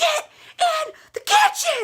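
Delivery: very high, swooping, drawn-out bellowed scream. Retelling calling someone down the hallway: imitating her own screaming. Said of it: "I just keep screaming and I'm like".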